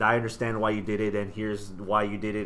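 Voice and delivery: ordinary talk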